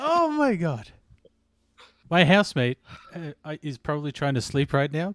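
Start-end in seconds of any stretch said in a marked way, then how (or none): 0.0-0.9 thrilled, excited shout, very high pitch. Watching a tense play in a card game match: yelling excitedly. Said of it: "I'm yelling too much into the microphone".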